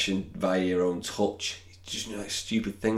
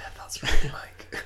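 spoken in a whisper. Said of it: "Let's stop whispering to me".

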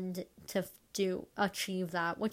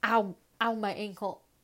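loud, sudden pained yelp out of nowhere; 4 dB louder than usual. Talking about own voice when an ankle suddenly buckles: sudden cry of pain. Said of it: "my ankle just buckled up really badly".

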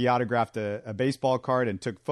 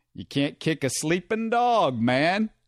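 put-on announcer accent, pitched slightly higher; 5 semitones higher than usual. Retelling what Jack Buck said to Mike Shannon after a hit, in a Mike Shannon accent. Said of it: "now that I hear myself doing the accent".

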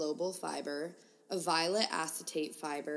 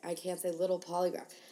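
normal talking voice

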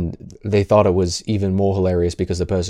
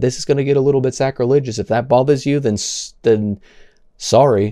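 dry, plainly insincere sarcasm, pitched up, acted; 5 semitones higher, 3 dB louder than usual. Quoting what a man said in his videos, imitating a sarcastic apology. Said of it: "he said so in a sarcastic manner".

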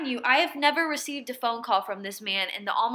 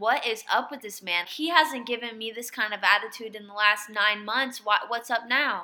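ordinary talk, nothing marked

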